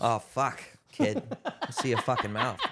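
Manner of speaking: imitated Boston accent. Repeating a quoted demand the others were discussing: Boston accent. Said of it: "Hearing that in a Boston accent".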